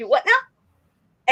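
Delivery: put-on Southern accent, laid on thick. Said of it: "I full go full southern".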